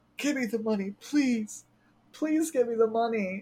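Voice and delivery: mock tearful, high, repeated crying plea. Retelling a show scene where a character begs for the money: imitating Nao pleading. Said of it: "crying and pleading".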